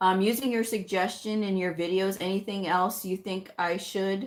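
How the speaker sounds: ordinary delivery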